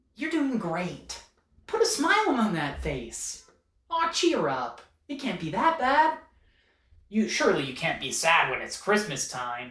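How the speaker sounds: loud, swooping, bouncy goofy elf voice. Recalling a scene in a glum retail store, addressing the workers in a goofy Buddy the Elf voice. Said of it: "a goofy elf voice".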